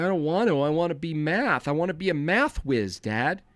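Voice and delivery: put-on pleading, protesting voice of a nerdy kid. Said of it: "He's like".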